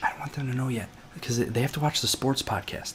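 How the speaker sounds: whispered speech. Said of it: "Stop whispering".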